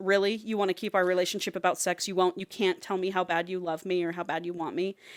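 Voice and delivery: mock angry man voice. Retelling a couple's argument, the speaker imitates the angry man. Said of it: "He gets so pissed".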